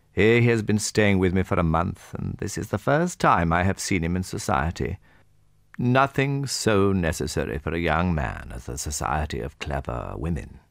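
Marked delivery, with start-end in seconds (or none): none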